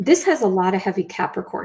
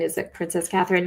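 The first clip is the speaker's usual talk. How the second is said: ordinary delivery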